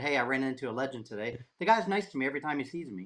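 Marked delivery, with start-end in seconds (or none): 0.0-1.4 mock tongue-in-cheek, dry sarcastic delivery. Retelling own post about running into someone: imitating own sarcastic remark. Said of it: "sarcastically said".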